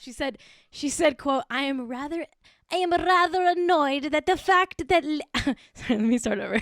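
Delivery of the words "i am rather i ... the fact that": fake Italian woman's accent, rude and ungrateful. Quoting what she said, in a put-on Italian accent. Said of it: "I've got to get the accent right".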